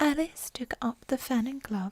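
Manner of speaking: plain reading voice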